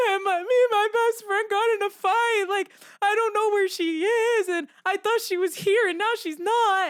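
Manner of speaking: high, crying voice, sobbing the words out through tears. Retelling pleading with a security guard about a lost friend: retelling own crying. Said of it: "I start crying to the security guard".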